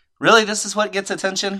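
normal talking voice

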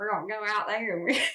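put-on attempt at a Southern accent. Asked to show it right now: Southern accent. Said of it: "I can do a great Southern accent".

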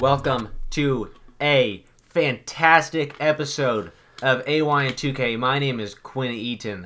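loud, slightly robotic, a bit mechanical voice. Host opening the episode with the welcome and own name: a little robotic. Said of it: "you almost started out a little robotic".

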